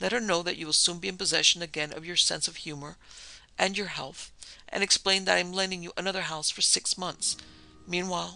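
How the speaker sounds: ordinary delivery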